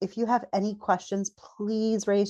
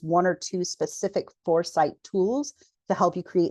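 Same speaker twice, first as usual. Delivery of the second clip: usual speaking voice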